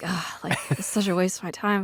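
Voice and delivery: put-on grumble. Recalling first watching a movie a brother picked, mock-grumbling. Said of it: "at first I'm like grumbling".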